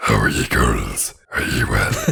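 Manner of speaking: deep, low, dropped-down creepy voice. Retelling how a man greets a circle of women, imitating his creep voice. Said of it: "he's creep voice".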